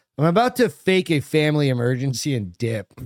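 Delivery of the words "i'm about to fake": plain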